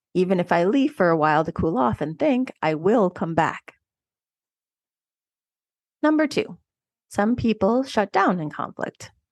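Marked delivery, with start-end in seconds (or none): none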